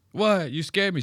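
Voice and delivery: high-pitched voice of a heavy smoker. Mimicking a woman on screen who sounds like she smokes a lot. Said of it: "She sounds like she smokes a lot".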